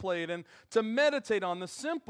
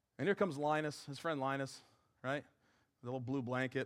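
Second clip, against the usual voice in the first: ordinary talk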